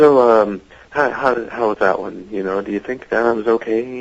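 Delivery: polite, gentle, mild, mild-mannered tone. Retelling a co-star asking after a take: imitating Alistair being mild-mannered. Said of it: "he's just real mild-mannered".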